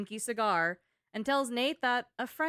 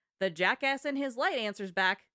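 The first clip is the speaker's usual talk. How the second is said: plain reading voice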